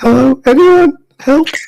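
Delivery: very high, teary whimpering cry. A man lying across a hole calls out for help, crying and whimpering. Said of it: "he's kind of crying and just whimpering".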